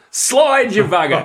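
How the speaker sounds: all-out, loud, top-of-the-lungs bellowed yell. Telling a joke about a racehorse owner at a photo finish: imitating a scream. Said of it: "he screams out at the top of his voice".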